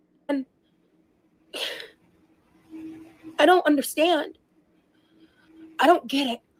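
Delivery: tearful, crying while speaking. Speaker reacting to accusations against them, crying while speaking. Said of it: "Sorry for crying".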